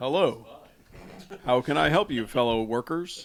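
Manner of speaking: put-on deep voice. Joking on a call with coworkers about a put-on deep voice. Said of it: "Listen to my deep voice".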